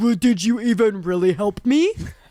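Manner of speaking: put-on nasty tone of voice. Retelling what was said earlier, imitating own nasty voice. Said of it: "I had to use my nasty voice".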